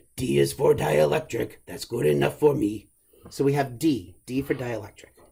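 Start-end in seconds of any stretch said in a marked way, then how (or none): 0.2-2.9 rough, creaky, rasping voice. Speaker explaining Gauss's law to listeners, in Cookie Monster voice. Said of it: "maybe it helps to hear in Cookie Monster's voice".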